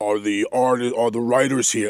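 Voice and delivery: huge, booming, massive room-filling voice. Speaker retelling a man in the studio calling for the writers, booming voice. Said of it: "his voice is so booming".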